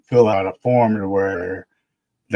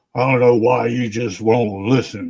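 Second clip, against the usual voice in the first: mock irate, fed-up, pissed-off woman's voice; 3 semitones higher than usual. Retelling what an annoyed administration lady said, imitating an angry admin lady. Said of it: "was pissed off".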